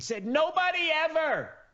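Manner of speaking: shrill, high, exasperated, frustrated yelling. Complaining about red tape that holds back rescue help, yelling. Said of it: "Sorry to be yelling".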